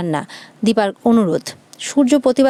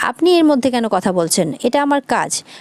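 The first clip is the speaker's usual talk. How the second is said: ordinary delivery, nothing marked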